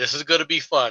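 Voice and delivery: ordinary talk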